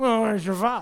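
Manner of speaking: snide, scornful, mocking sarcastic tone. Reading the crowd's question to Jesus from a verse: sarcastic reading. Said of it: "I was reading it like that in, like, a sarcastic way".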